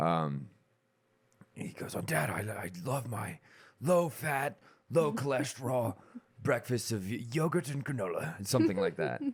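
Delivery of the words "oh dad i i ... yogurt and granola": put-on affluent educated voice, higher. Retelling a TV scene where the son answers his dad: Frasier impersonation. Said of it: "That was a pretty good impersonation right there".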